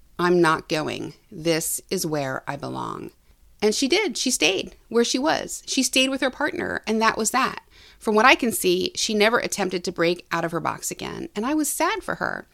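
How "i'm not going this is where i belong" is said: imitated flat, deadpan monotone, lower, slower. Speaker quotes a woman who phoned them, imitating a monotone voice. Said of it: "She simply said to me in a monotone voice".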